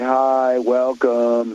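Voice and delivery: put-on listless, bored, unmotivated desk clerk voice. Speaker mimics how an unmotivated worker at the desk greets people, imitating an unmotivated desk clerk. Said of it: "who has no motivation and is at the desk".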